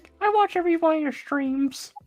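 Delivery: very high little cartoon mouse voice. Posing as a fan speaking to a streamer, in a Mickey Mouse voice. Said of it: "I'm gonna talk in the Mickey voice".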